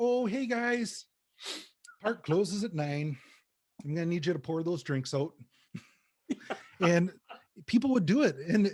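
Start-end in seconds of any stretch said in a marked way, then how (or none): 0.0-5.3 pretend Canadian accent. Explaining how they handle aggressive people by pretending to be Canadian: fake Canadian accent. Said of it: "so I'd pretend to be Canadian".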